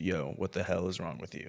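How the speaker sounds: hushed voice, barely above a breath. Retelling what a classmate said behind them: imitating a half-whisper. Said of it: "The guy behind me whispers".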